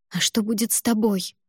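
plain reading voice

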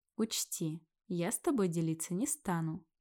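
plain

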